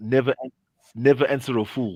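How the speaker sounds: ordinary talk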